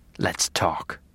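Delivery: gentle, cold whisper. Reading a novel, the narrator addressing a bound captive, in the Dark Passenger's gentle, cold voice. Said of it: "we said in the dark passenger's gentle, cold voice".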